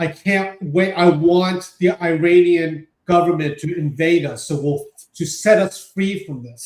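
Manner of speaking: ordinary talk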